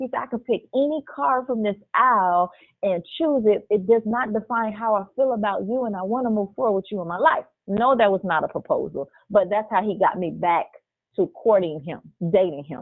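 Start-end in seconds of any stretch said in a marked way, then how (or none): none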